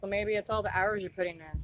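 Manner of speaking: ordinary talk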